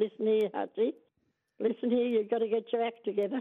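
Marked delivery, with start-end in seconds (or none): none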